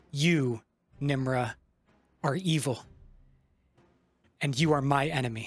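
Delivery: menacing, threatening tone. Choking an enemy in character while accusing her: menacing accusation. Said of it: "snap my hand around Nimra's neck".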